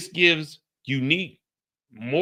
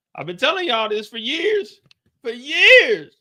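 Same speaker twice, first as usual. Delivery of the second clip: voice cracking, very high, loud and passionate; 10 semitones higher, 6 dB louder than usual. Insisting to listeners they've been saying this for years: voice cracking with passion. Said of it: "you can hear my voice cracking".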